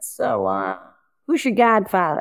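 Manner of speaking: put-on heavy, laid-on-thick Boston accent, swooping tune. Retelling a man from the Dukakis campaign asking him a question, in a thick Boston accent. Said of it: "in a very thick accent, Boston accent".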